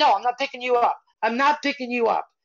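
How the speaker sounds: put-on scream, high pitch. Retelling how a mother answered her crying little girl, imitating a mother screaming. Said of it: "continued to scream at her little girl".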